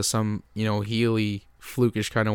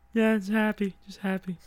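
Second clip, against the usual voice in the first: mock very high, cartoonish puppet voice; 10 semitones higher than usual. Playing the introduced guest, Ronda Rousey: Ronda Rousey impression, Muppet voice. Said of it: "Why do you sound like a Muppet?".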